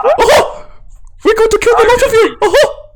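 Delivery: shrill, squeaky, very high little gnome voice. Voicing the gnome character in the group's game: squeaky gnome voice. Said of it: "the gnome has a nice squeaky voice".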